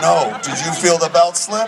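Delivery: ordinary talk, nothing marked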